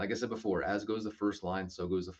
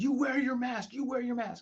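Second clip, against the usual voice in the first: put-on urgent, insistent yelling, very high-pitched. Retelling a mentor yelling at them to wear a mask, retelling a yell. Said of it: "he was just yelling".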